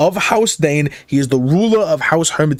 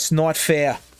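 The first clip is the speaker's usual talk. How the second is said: imitated Brooklyn accent, quieter; 5 dB quieter than usual. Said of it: "you start with the Larry David impression".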